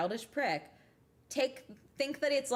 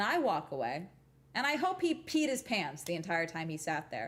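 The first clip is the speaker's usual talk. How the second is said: ordinary talk, nothing marked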